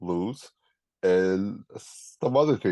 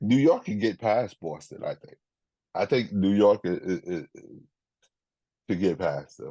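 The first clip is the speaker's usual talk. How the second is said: normal talking voice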